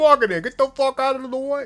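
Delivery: very high, very loud, shrill put-on Brooklyn accent. Showing how you gotta talk in a Brooklyn accent. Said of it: "gotta talk like this".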